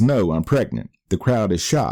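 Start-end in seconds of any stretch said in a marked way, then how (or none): none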